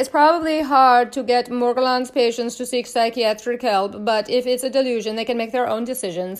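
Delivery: badly done put-on German accent. Reading a case description aloud: bad German accent. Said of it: "That was my German accent".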